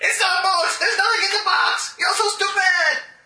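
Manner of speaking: very high, throat-straining put-on character voice. Voicing a character mocking a player about a box: strained put-on character voice. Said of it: "enough of that voice. It hurts my throat".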